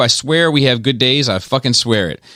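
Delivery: ordinary talk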